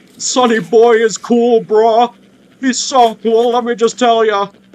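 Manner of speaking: very loud, high-pitched, belted cartoon voice. Asked to say a line in the Jumbo Josh voice, in Jumbo Josh voice. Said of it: "in the Jumbo Josh voice".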